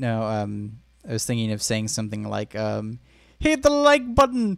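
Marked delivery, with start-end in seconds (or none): 3.4-4.6 squeaky, very high put-on Irish accent. Quoting a line one might say to Jacksepticeye: Jacksepticeye impression. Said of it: "In your best Irish".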